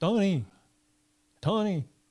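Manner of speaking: very bad fake Cuban accent. Knocking on Tony's door, the speaker calls to him in a very bad Cuban accent. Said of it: "I do my very worst Cuban accent".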